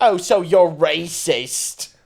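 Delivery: put-on loud, slow failed Australian accent sounding English. Retelling an Australian girl's reply in Overwatch, in a failed Australian accent. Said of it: "that was like English".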